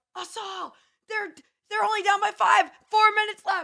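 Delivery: put-on very high, shrill yell. Recalling yelling the score to a girl in class on the rower; retelling a yell. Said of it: "I'm yelling to the girl in class".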